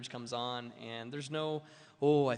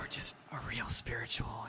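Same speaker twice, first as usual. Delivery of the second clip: put-on soft soothing voice, slower. Speaker imitates how spiritual people talk: put-on soft soothing voice. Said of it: "that soothing voice".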